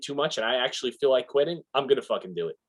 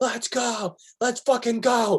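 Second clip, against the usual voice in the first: very high, very slow, drawn-out stretched shriek; 11 semitones higher than usual. Imagining a swimmer starting to scream, imitating a swimmer screaming. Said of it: "start screaming like".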